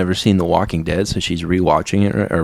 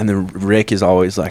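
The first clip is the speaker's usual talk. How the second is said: ordinary talk, nothing marked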